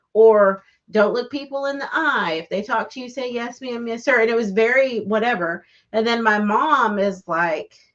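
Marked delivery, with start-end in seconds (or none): none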